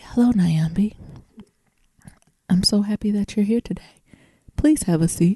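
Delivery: imitated very quiet, hushed voice. Imitating the new therapist greeting the speaker: imitating someone talking very quietly. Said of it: "she was talking so quietly".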